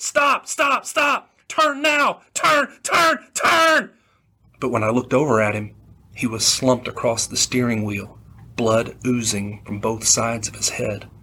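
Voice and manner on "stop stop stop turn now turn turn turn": mock very high, drawn-out, urgent shouts. As passengers run for cover, the narrator shouts again at the pilot. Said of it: "I shouted again at the pilot".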